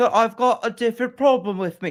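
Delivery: mock Cockney British accent, pitched high. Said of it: "Oscar Isaac has a Cockney British accent".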